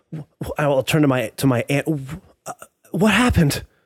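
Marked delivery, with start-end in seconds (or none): 1.8-3.6 disbelieving, stunned, breathless delivery. Turning to the aunt while in disbelief and shock: shocked, breathing heavily. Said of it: "in disbelief and shock as I am breathing heavily".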